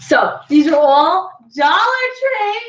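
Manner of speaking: high-pitched, eager, excited exclaiming burst. Showing the viewer her dollar tree gift-wrap supplies: excited yell. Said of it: "I won't yell, I'm sorry".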